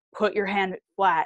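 put-on gruff man's voice. Retelling what a grizzled tiger keeper said: imitating a gruff man. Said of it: "a very gruff".

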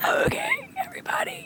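put-on squeaky sick voice. Retelling teaching online while very sick: imitating her sick froggy voice. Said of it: "like an ill frog, who was like".

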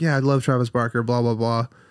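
ordinary talk

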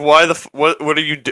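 acted, mock-disgusted tone. Recounting own reaction on seeing two women filming a TikTok, retelling a disgusted reaction.

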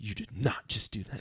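acted, enraged, disbelieving, furious mother voice. Retelling how mom reacted after punching the dog bowl: imitating mom's fury.

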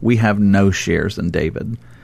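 ordinary delivery

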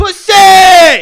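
shouting. Answering a request to say it with your chest: yelling. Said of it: "Why'd you yell that shit?".

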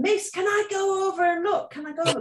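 put-on, very high-pitched, shrill shout. Retelling asking the dinner lady to go and look: imitating own past shouting. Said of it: "I was shouting at her".

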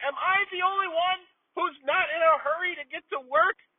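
very high-pitched yell, complaining tone. Speaker acting out what they yell on the way to work, retelling a yell. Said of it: "I'm yelling".

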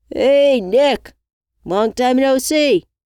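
shrill, booming, far-carrying, drawn-out yell. Reading a man walking up a driveway calling to a woman, yelling out. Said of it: "Travis yelled out".

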